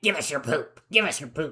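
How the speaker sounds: cloaked sewer creature voice, repeated. Retelling what cloaked sewer guys in a sewer dimension said: voice of cloaked sewer guys. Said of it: "talked in voices like this".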